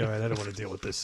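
mocking dismissive tone. Imitating a co-host's reaction to a challenge: dismissive reply. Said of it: "his little dismissive way of just like".

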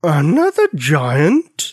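rumbling, thunderous giant voice, drawn out. Narrating a story, a giant asks Bonnie a question, in a rumbly, thunder-like voice. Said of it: "In a rumbly, thunder-like voice, she asked".

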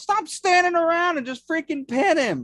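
yelled out, very high-pitched shout. Retelling what a friend shouted during a match: imitating someone shouting. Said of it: "Josh just shouts".

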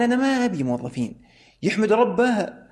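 high-pitched, scornful, dismissive, contemptuous sneer. Speaker quoting a hiring manager who dismissed Saudi employees, mimicking contempt. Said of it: "كان يقول لي بازدراء".

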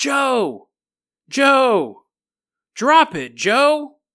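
very slow, high, eerie, ghostly spectral call. Retelling a story where a voice speaks to Joe: ghost voice. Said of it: "The ghost voice goes".

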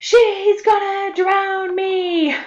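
very high, drawn-out, booming biggest-voice yell. Retelling what he yelled to the whole pool while being held, retelling a big yell. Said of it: "he yells in his biggest voice".

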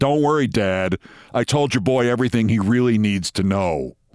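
put-on deep, low New York accent. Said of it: "in a deep voice, New York accent".

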